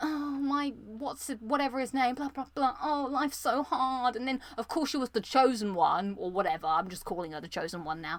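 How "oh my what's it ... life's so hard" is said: pretentious, superior, holier-than-thou voice. Mocking a game character who is found pretentious: pretentious Aloy impression. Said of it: "I just found her a little bit pretentious".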